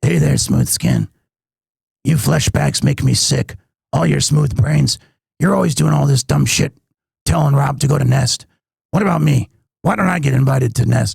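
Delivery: voice dropped low, rasped out. Showing the voice planned for a record: Fallout ghoul voice. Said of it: "be a ghoul from Fallout".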